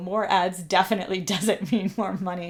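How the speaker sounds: talking through laughter. Responding to a viewer's super chat, laughing while talking. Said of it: "I'm sorry that I'm laughing".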